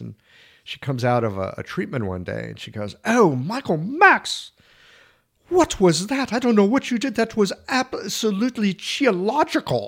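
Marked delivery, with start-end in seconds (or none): 3.0-9.9 put-on Scottish or Irish accent, pitched way up. Retelling what a patient said after a treatment: imitating a Scottish or Irish accent. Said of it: "she's got a great accent".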